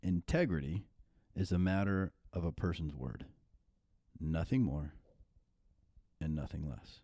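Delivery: slow, deliberate pace. Reading out a one-sentence definition so listeners get it: saying it slowly. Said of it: "worth just saying it slow".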